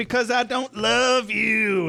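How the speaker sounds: full-on high, drawn-out trashy quarrelling. Retelling Buffy's answer to Spike, imitating a trailer trash argument. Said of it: "It's full-on trailer trash argument".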